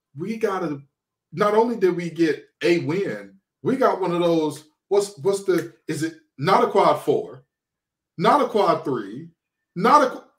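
ordinary delivery

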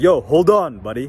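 firm, very strong, forceful and commanding delivery. Retelling warning someone who started touching the phone, in a very strong voice. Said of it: "in a very strong voice".

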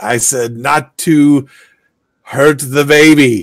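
very loud, high-pitched voice. Narrating the game, the nursemaid speaks again as you enter the room, in a very loud voice. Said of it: "the nursemaid says again in a very loud voice".

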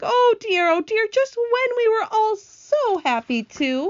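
dismayed crying out. The ladybug, after two companions fall toward the sea, crying out in dismay. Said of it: "cried the ladybug".

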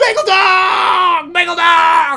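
shrill, very high, drawn-out holler, dog stretched long. Telling how he rolled down the car windows, reenact yelling at passersby. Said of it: "yelling at passersby on the street".

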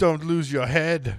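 put-on loud, booming Austrian accent. Voicing a character in a game world they created: austrian accent. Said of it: "You sounded very Austrian".

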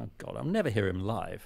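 ordinary talk, nothing marked

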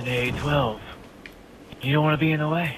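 half-whisper in a tv host manner. Imitating the Future Weapons host in his half-whispering voice. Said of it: "In the future weapons dude's voice, where he whispers".

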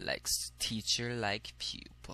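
soft, slow, creepy voice.

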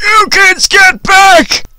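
loud high drawn-out yelling. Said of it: "he yelled".

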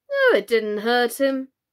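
unconcerned, careless, offhand, dismissive tone. The unicorn answers the king's complaint about running him through, carelessly. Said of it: "said the unicorn carelessly".

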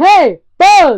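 full-throated, high, very loud shout. Show how Buzz panics when you shout at him, shouting. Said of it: "when you shout at him, or yell at him".

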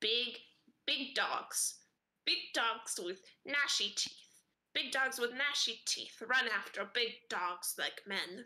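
talking crow voice with choppy, simple, broken phrasing. A game master voices a crow answering a player's questions, talking crow voice. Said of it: "One flutters over to you and starts pecking at the food in your hand".

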